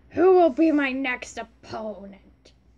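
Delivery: loud, grimy dirty-man voice. Doing the character voices, voicing Ryuga like a dirty man. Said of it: "Trying to make him sound like a dirty man".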